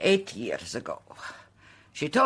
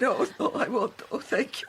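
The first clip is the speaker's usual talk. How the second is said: tearful, speaking through tears; 8 semitones higher than usual. In a drama, a character being comforted and handed a tissue answers while crying. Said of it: "It's very foolish of me to cry".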